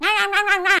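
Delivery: rural, working-class Southern American accent. Showing how working-class southern relatives talk: working-class southern accent. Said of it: "talk like this".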